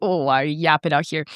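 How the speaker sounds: cranky, grumpy cat voice. Interrupted by their cat waking up, speaking for it: voicing a grumpy cat. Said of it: "he's coming to me all grumpy like".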